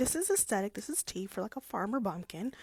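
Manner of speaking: ordinary talk, nothing marked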